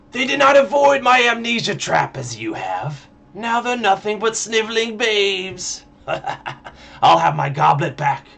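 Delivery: high, raspy, rasping demon voice. Narrator reading a demonic figure's words to Triskel, in a raspy voice. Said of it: "the figure rasps".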